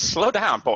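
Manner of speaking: classic old cartoon rooster voice. Joking with the other players before the game: Foghorn Leghorn voice. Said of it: "Foghorn Leghorn".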